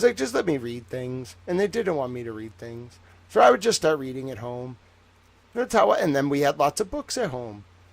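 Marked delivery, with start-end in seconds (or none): none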